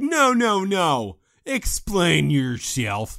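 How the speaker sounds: acted, slow, sing-song, swooping whine. Retelling a scene where one character accuses another, imitating a whiny voice. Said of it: "He sounded so whiny".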